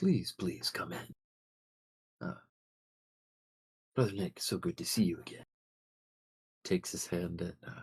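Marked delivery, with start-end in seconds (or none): 0.0-5.4 put-on soft, gentle, kind elderly man voice. Voicing an older priest in robes welcoming everyone in, soft, kind old priest voice. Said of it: "welcomes you all in with a, a soft, kind voice".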